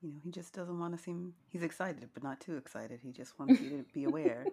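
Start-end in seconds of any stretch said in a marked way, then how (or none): 3.0-4.4 formal, even-pitched monotone. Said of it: "That's exactly how he sounds".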